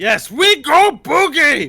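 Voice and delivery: high, loud, slow goblin yell. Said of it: "He yells out".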